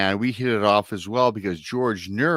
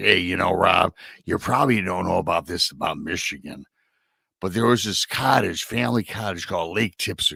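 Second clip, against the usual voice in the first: slightly gravelly, rough-edged, gravel-tinged voice; 3 semitones lower than usual. Recounting a host chatting about growing up in Michigan: gravelly Jimmy Church impression. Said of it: "he talks a little gravelly voice".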